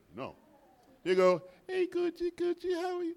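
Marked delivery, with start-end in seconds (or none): 1.7-3.1 put-on very high-pitched baby talk voice. Showing how people greet a little baby, in baby talk voice. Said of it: "You use that baby voice".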